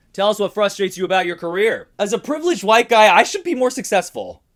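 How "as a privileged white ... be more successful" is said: loud, high-pitched angry outburst. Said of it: "tap into that anger".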